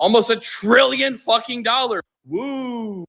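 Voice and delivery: dry, slow sarcastic cheer with drawn-out woo. Addressing people about XRP, the speaker turns sarcastic. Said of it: "Obviously being sarcastic".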